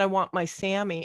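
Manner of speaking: normal talking voice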